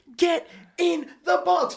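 high, slow, frantic, desperate scream. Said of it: "I'm sitting there screaming at Michael Theo going".

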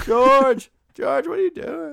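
shrill, very loud shout, high. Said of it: "My Seinfeld is just naming characters".

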